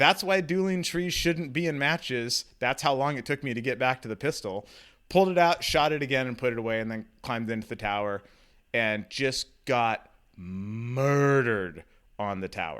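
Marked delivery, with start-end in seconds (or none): 0.0-2.5 high-pitched shout, called out. Retelling a shout made during a match stage: retelling own yell. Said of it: "and I yelled out".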